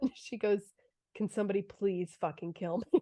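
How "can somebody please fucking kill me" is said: mock-deadpan delivery, much quieter. Telling a story, the speaker quotes what someone's mother said to the camera: retelling a deadpan line. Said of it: "she looks deadpan at the camera".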